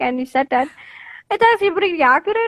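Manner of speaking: put-on Indian English accent.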